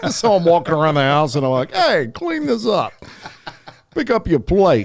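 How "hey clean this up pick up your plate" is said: tough, animated, pitched-up, bossy mobster voice. Retelling giving orders around the house after mafia podcasts; mock mafia-boss talk. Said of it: "you think you're in the mafia".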